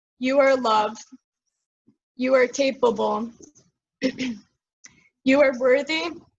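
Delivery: voice cracking and breaking over the words. Guiding a listener through mirror affirmations, voice cracking. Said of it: "I don't know why my voice is cracking".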